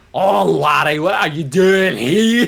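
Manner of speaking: very loud, high-pitched put-on Scottish brogue. Imitating the gym leaders of Scotland greeting a kid: imitating a Scottish accent. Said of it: "the gyms of Scotland".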